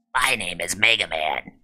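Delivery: low, raspy heavy-smoker's voice. Recalling the Captain N cartoon, the speaker quotes its hero in a raspy Mega Man voice. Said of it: "sounded like he had been smoking for over thirty years".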